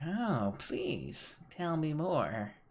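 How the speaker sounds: put-on high, croaky, croaking old hag voice. Playing the hag, speaking to the adventuring party: croaking hag voice. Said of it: "The hag croaks".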